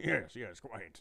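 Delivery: soft put-on posh monocled gentleman voice. Picturing oneself in a high-back chair with cigar and monocle: put-on monocled gentleman voice. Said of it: "you're over in the other chair, [name], going".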